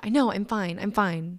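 play-acted curt, snapping delivery in a nasty tone. Retelling snapping back at people who said she was okay: retelling a mean snap. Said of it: "I said it like that in such a mean tone".

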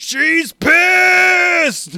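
ear-splitting, shrill, very loud, angry, dragged-out high scream. Describing a scene, the speaker imitates an actor's scream: imitating a scream. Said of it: "Polly just screams".

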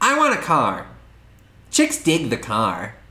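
whiny, meh-sounding sidekick voice with big pitch swoops. Recounting a Batman film scene, speaker quotes Robin; whiny Robin voice. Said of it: "Why is that your Robin voice?".

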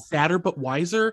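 ordinary talk

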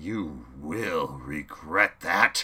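enraged, loud, slow, drawn-out rumble. The leader, surveying his dead men, addresses Chaos, rumbling. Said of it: "the man rumbled".

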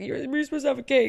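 mock crying voice. Speaker recounts what a woman said, imitating someone crying. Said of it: "And then she's like crying".

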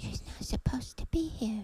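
terrified, breathy whisper gripped by terror. As a figure's voice draws closer, the cameraman whispers in a terrified tone. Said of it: "he whispered in a terrified tone".

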